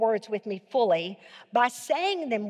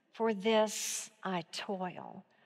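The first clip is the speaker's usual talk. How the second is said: hesitant, tentative, very slow, swooping musing; 3 semitones lower, 8 dB quieter than usual. Coaching a line said as a statement, but tentative, thinking it over. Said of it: "I want you to say it as a statement, but I want you to say it tentatively. Like you're thinking about".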